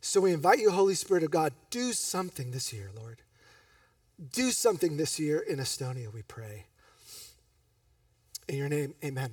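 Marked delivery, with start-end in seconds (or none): 1.7-9.3 choked-up voice catching with emotion. Praying aloud to the Holy Spirit for Estonia, you get choked up. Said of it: "Sorry I get choked up".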